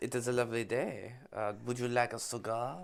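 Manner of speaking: put-on French accent on English. Asked to give it a go, the speaker tries a French accent. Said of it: "I did a pretty good French accent".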